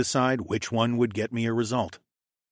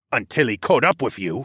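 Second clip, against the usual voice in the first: ordinary delivery, nothing marked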